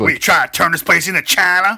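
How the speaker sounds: mock rural Southern accent. Imitating the person being discussed in a redneck guy voice: Jim Cornette voice. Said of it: "a default Jim Cornette voice".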